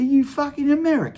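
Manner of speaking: put-on Australian or English accent. Retelling the old guy asking if the speaker is american: imitating an australian or english accent. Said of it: "I mix up my Australian and English all the time when I do my accents".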